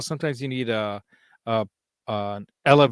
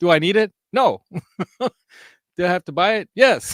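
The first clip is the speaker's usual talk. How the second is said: put-on loud, pitched-up yell; 6 semitones higher, 5 dB louder than usual. Explaining why he had to buy something anyway, the speaker is yelling. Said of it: "when I'm yelling like that".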